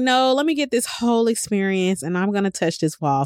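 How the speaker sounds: plain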